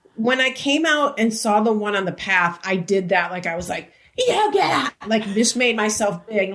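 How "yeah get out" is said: mock, very high, commanding yell. Retelling chasing coyotes off the path: retelling own yell at coyotes. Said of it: "it was both types of yelling".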